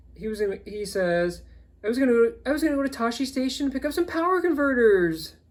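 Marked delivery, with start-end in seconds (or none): 1.9-5.3 really whiny complaining voice, high and loud. Retelling a funny movie scene, quoting Luke, whiny Luke voice. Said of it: "in his really whiny voice".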